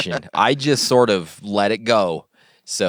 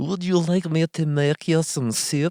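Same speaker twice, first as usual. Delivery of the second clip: put-on Russian accent, pitched up; 8 semitones higher, 3 dB quieter than usual.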